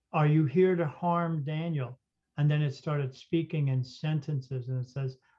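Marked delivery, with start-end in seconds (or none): none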